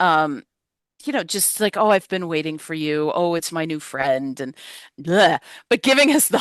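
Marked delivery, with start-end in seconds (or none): 1.8-4.4 hushed, deep, low funeral director voice. Imitating the coroner character's lines: hushed deep Tony Todd voice. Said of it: "that hushed voice, that deep voice".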